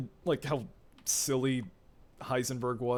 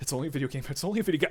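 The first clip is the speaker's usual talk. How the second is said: play-acted frightened, scared, repeated self-reassuring tone; 2 semitones higher than usual. Retelling playing a scary part in VR while looking at the floor: retelling own scared self-talk. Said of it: "that was fucking intense".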